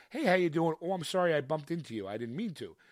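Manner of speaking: mock overly nice, polite voice. Imitating an overly nice guy who bumped into someone: imitating an overly nice guy. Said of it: "the overly nice person where it's like".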